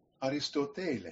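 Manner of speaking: careful, reconstructed classical Greek pronunciation. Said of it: "who's going to give the classical Greek pronunciation".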